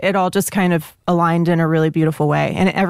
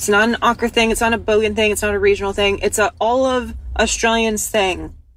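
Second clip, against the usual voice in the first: normal talking voice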